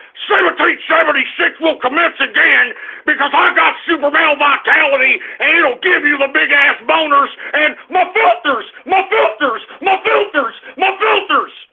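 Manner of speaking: bombastic talk-show host ranting voice. Show a caller how you want them to sound next time, with an Alex Jones impression. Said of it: "I want you to sound like Alex Jones".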